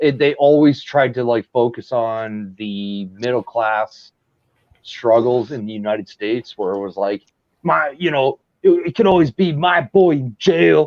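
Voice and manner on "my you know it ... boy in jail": put-on Detroit accent, pitched up. Quoting a typical line from the movies in a put-on Detroit accent. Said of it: "a Detroit accent you were doing?".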